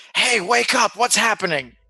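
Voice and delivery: carrying stage whisper. Waking a fallen party member in character: loud stage whisper. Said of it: "stage whispering".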